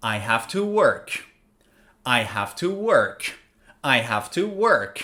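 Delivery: pitch falls at the end on "work". Teaching English intonation, giving an example sentence, falling intonation. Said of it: "My tone of voice goes down".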